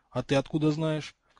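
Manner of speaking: ordinary talk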